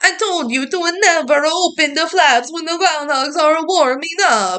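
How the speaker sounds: heavy, exaggerated put-on Italian accent, pitched high. Retelling the concession stand runner's one line, in an Italian accent. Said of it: "somehow just so Italian".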